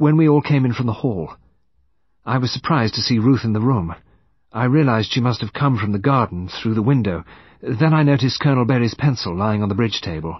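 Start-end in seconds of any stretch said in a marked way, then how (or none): none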